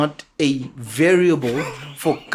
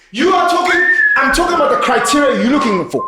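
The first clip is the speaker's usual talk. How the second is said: shrill, very high, loud yelling; 10 semitones higher, 6 dB louder than usual. Arguing with another speaker about the criteria she looks for: shouting. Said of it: "You're shouting at me".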